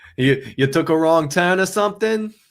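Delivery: poorly done put-on Boston accent. Joking about a Yankees fan going to that stadium, in a terrible Boston accent. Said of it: "that was a terrible Boston accent".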